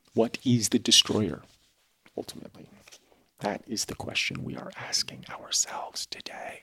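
hushed, musing whisper throughout. Discussing a passage, the speaker poses the day's question in a whisper. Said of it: "I'm whispering".

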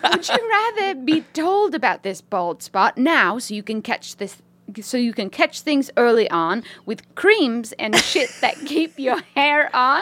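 put-on British woman's accent. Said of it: "To read this in a British accent?".

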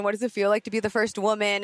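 ordinary talk

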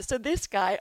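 words stretched by a yawn. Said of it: "I'm sorry I'm yawning".

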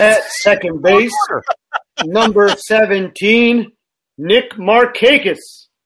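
stadium announcer delivery, like a ballpark PA. Auditioning by announcing the batting lineup, in a ballpark announcer voice. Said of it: "just kind of announcer guy".

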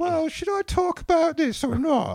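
put-on very high, loud voice with an English accent. Imitating a celebrity from England who talks like this: imitating Russell Brand. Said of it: "he talks like this".

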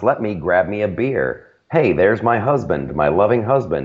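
robotic, calculated, scripted-sounding folksy chatter. Mocking a politician acting casual with a beer: robotic Elizabeth Warren impression. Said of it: "from Elizabeth Warren's".

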